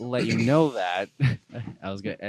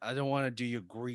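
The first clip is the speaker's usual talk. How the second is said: put-on New York accent; 10 dB quieter than usual. Imitating the brother telling his dad he wants to do art: new york accent. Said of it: "that's pretty good New York".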